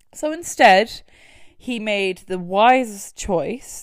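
very loud, dripping heavy sarcasm. Speaker recounting a man's decision in a crime story, extremely sarcastic. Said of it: "this is me being extremely sarcastic".

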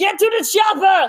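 very slow, drawn-out, high-pitched yell. Doing an impression for the group when asked: Arnold Schwarzenegger impression, yelling. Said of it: "Arnold Schwarzenegger, I'm good at that one".

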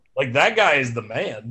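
ordinary delivery

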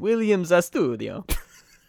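Italian-sounding accent on a name. Saying a cheering section's name as a pun: Italian accent on the name. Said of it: "but it's like an Italian accent".

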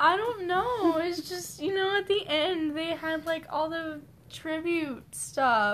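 high, tearful crying voice.

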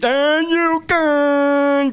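put-on lumbering monster voice. Complaining about the government, imitating Sloth from the Goonies. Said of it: "all I can hear".

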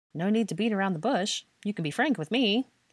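playful teasing. Harry answers Hermione after she announces she is seeing Draco, teasing. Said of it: "he teasingly remarked".

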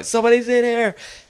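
very high, squeaky, high-pitched yell. Recalling yelling after a knock, in a high-pitched voice. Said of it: "like a high-pitched voice".

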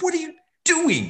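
screaming, very high, shrill and loud. Retelling screaming at a kid who scored against the plan: imitating own screaming. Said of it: "I was screaming at her".

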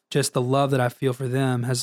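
ordinary talk

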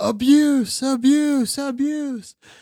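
high-pitched, very loud, desperate yell. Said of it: "and I just yelled".

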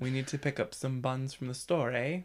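first-try put-on Canadian accent. Asked for a first attempt at a Canadian accent, the speaker improvises; put-on Canadian accent. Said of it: "give me your first attempt at a Canadian".

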